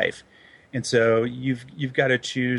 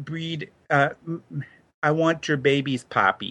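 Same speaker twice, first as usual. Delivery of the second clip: attempted put-on Latin American accent; 3 semitones higher than usual.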